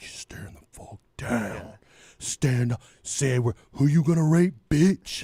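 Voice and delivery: gruff, growling, low superhero voice.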